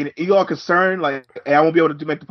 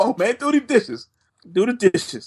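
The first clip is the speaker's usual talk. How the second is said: put-on laughing voice, higher; 6 semitones higher than usual. Retelling his dad laughing and insisting on the dishes: imitating his dad. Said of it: "He's like".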